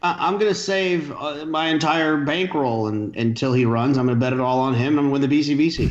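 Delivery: heavy, thickly laid-on sarcasm. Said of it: "there's a lot of sarcasm there".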